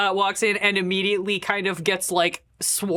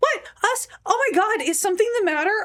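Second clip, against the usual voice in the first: very high, overplayed fake-innocent surprise; 14 semitones higher than usual. Voicing suspicious supermodels who feign shock: playing up innocent surprise. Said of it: "really playing up".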